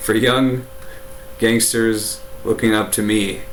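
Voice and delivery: ordinary delivery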